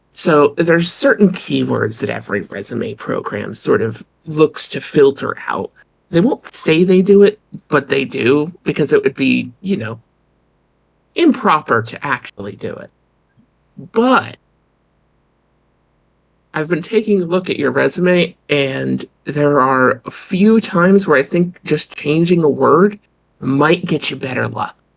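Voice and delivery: confiding, conspiratorial tone. Retelling how a resume program talked to her: imitating a semi-conspiratorial voice. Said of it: "lowers its tone into a, a, a semi-conspiratorial voice".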